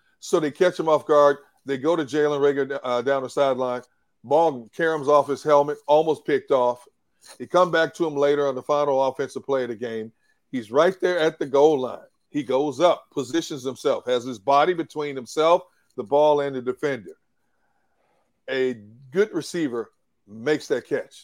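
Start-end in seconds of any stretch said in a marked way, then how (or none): 18.5-21.2 stress placed on the words good receiver. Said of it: "I emphasize the words good receiver".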